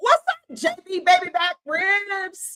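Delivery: mock high, drawn-out jeering scream, full-lunged. Retelling how she screamed at President Trump at the plant: imitating someone screaming. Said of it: "Starts screaming".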